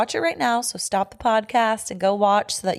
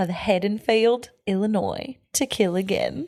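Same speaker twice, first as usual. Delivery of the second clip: fake, swooping Australian accent, badly done. Reading a movie synopsis aloud in a put-on accent after being urged: put-on bad Australian accent. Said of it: "read the synopsis in an accent".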